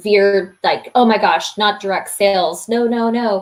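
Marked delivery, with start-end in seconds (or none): none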